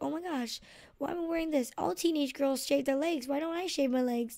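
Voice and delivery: put-on frightened, panicky voice. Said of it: "I was just really scared".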